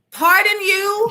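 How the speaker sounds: high, loud, mock-indignant delivery.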